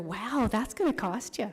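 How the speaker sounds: playful, light teasing ribbing tone. At a council meeting, the speaker teases a commissioner. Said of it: "I'm just teasing".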